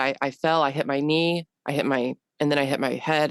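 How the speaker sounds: normal talking voice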